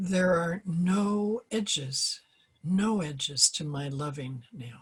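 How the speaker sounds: slow delivery with long pauses. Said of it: "I'm gonna read it slowly".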